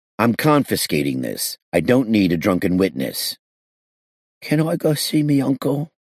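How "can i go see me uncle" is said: shaky, trembling, high-pitched voice. The kid, held by the narrator as a witness, in a trembling voice. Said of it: "The kid said in a trembling voice".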